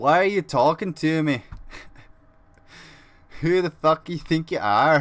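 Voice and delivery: put-on Scottish accent, having a go. Acting out a man snapping at someone who approaches him, in a put-on Scottish accent. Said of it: "Is that a better Scottish accent?".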